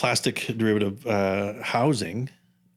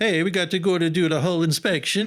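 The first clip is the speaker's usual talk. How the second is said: bad, fake, terrible, pitched-up Swedish accent; 8 semitones higher, 4 dB louder than usual. Quoting a swedish first officer, in a terrible swedish accent. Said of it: "That was a terrible accent".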